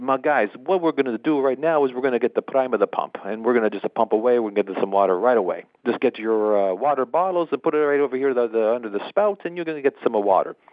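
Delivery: put-on Italian accent of an older man. Speaker retells what an Italian man told the group at a well pump: imitating John's Italian accent. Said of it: "my best impression of John, his Italian language there".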